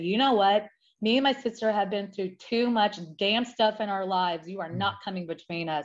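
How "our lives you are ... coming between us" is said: ordinary talk, nothing marked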